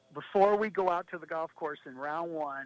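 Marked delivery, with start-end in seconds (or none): none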